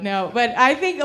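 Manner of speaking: ordinary delivery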